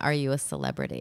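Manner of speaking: very low, discreet, hushed half-whisper. A speaker imagines a flight attendant approaching the masked guest: imitating a flight attendant half-whispering. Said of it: "a flight attendant whispering".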